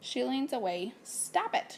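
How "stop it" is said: sharp, scolding, pitched-up tone. Reading a story aloud, the owner scolds the dog: sharp voice. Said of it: "she says in a sharp voice".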